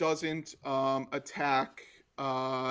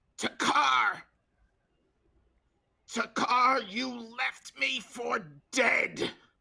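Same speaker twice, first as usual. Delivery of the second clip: small, very high, slow, raspy, beat-up hoarse yell; 9 semitones higher than usual. A small voice behind the party yells at Takar, small raspy beat-up voice. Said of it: "it's very raspy and like beat up".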